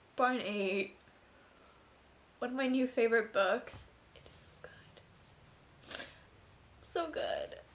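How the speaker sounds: tearful voice, crying while talking. Book reviewer introduces a book just finished, still crying. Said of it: "I'm still crying".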